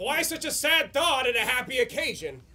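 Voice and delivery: ordinary talk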